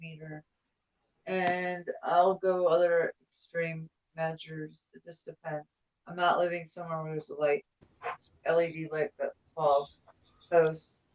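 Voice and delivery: soft, indistinct, drifting, dreamy mumble. Talking to the group while they struggle to hear you: mumbling. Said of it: "It's like you're mumbling".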